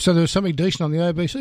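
fast, sarcastic dig. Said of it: "Oh, sarcasm".

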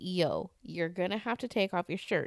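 ordinary delivery

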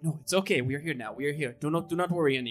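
soft, reassuring whisper. Comforting a freed wolf in the cage: whispering reassuringly. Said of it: "And just start whispering, like, sort of reassuringly to her".

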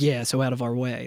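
low, quiet, guarded, protective, shielding tone. Imitating a game line's voice delivery: low protective Tidus voice. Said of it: "gets a little low, like, protective".

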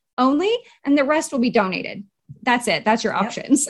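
ordinary talk

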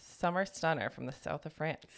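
ordinary talk

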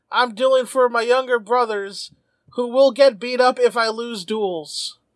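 tearful, sobbing voice with pleading tone. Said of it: "falls to his knees in tears and goes".

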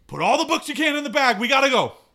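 very high-pitched, very loud yelling. Climbing out in character, calling to Andrea about the bag: yelling. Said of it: "I'm gonna yell at Andrea".

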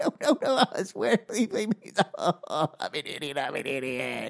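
soft, tearful, crying voice. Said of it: "I'm already starting to cry".

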